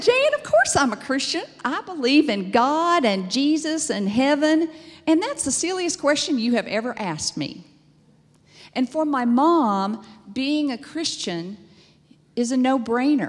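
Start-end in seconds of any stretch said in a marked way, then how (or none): 0.0-7.6 put-on Texas accent, pitched up. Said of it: "I have to use the Texas accent".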